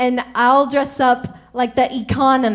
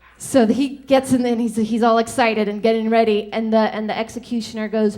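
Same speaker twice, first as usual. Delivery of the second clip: plain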